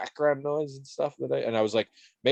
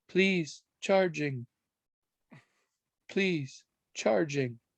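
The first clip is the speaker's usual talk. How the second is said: very soft, exhausted, far-off, high digitized machine voice; 5 semitones higher than usual. Imitating a device announcing it is charging, mock-exhausted and very soft. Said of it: "very softly, as if weak from exhaustion".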